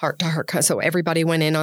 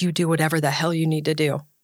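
put-on mean, harsh voice. Her partner replies when she says she'll call an ambulance, retelling a mean tone.

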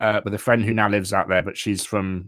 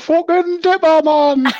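put-on Geordie accent, much higher, louder; 10 dB louder than usual. Talking about riding the Big Dipper on Saturday, in a put-on Geordie accent. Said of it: "It's the one accent I find really hard".

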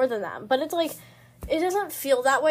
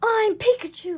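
mock child screaming, higher; 9 semitones higher, 3 dB louder than usual. Imitating a younger brother who screams while playing: imitating a screaming brother. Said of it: "he's just screaming or, like".

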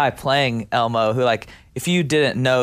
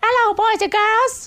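very high-pitched puppet voice. Showing which voice he tried to do, in an Elmo voice. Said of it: "I did try to do like an Elmo".

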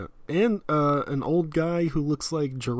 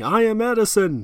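grand, high-pitched shouted yell; 6 semitones higher, 4 dB louder than usual. Describing someone breaking a flask over an assistant's head, acting out a yell. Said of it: "while yelling".

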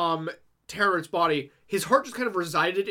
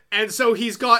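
usual speaking voice

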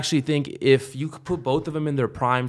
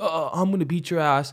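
put-on stuttering bully voice; 2 semitones higher, 3 dB quieter than usual. Recalling the interviews before a fight, Cody impression as a stuttering bully. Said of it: "Cody sounded like a fucking high school bully".

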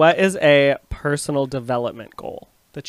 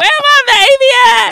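put-on shrill, loud, slow call with baby stretched out; 10 dB louder than usual. Retelling how an aunt greeted on the phone: imitating Edmund's aunt. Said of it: "That's literally how she said it".

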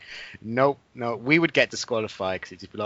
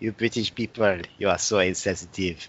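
mock French accent, lower; 4 semitones lower than usual. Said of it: "you just can't stop speaking in a French accent".

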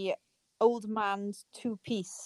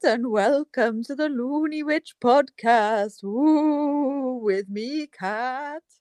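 loud, spooky vampire count voice, "ooh" drawn out; 4 semitones higher, 5 dB louder than usual. A podcast host opens the show in a spooky voice. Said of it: "I was doing a spooky voice".

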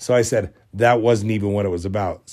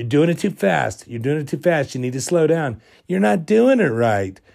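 acted, high, scolding yell, repeated over and over; 6 semitones higher than usual. Retelling a dream of being yelled at while washing a corpse, imitating someone yelling. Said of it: "one of them was yelling".

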